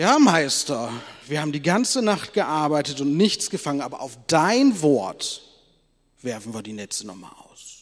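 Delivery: slightly sarcastic, loud, slow sarcastic emphasis.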